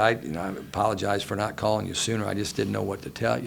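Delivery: ordinary talk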